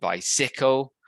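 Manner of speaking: bicycle with stress on second syllable cy. Describing a slightly off stress pattern: bicycle stressed on second syllable. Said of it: "second syllable um, stressed rather than the first".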